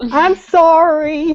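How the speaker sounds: exaggerated, slow, high, loud mocking tone.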